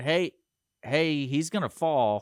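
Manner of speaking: acted-out scream. Retelling warning people as a man was about to fall, retelling a scream. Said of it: "I start screaming".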